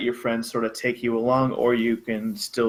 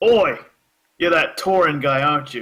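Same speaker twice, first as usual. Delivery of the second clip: rough, gravelly character voice; 3 semitones higher, 5 dB louder than usual. Narrating for the party, a voice calls out as they pass: gruff voice. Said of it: "this kind of gruff voice".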